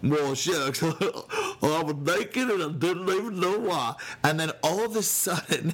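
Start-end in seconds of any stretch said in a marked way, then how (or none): 0.0-4.0 daft, silly, goofy comic voice. Acting out Adam and Eve's words, silly goofy voice. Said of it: "that's my silly voice".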